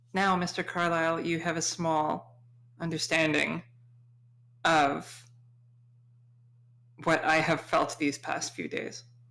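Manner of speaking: very quiet muttering under the breath. Speaking in character, leaning over to another character: very quietly, under her breath. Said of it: "say very quietly, sort of under her breath".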